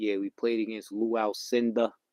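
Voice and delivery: loud, put-on New York accent. Quoting an old coach's favourite story, imitating a New York accent. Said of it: "he had that New York accent".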